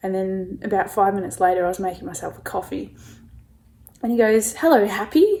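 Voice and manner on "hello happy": play-acted, really sarcastic, high and loud. Retelling how a supervisor greeted them: imitating a sarcastic greeting. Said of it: "in a really, like, sarcastic way".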